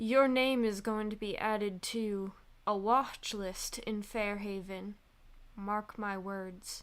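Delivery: menacing, threatening whisper. Voicing a character stepping close to warn someone: whispering a threat. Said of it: "she only has to whisper".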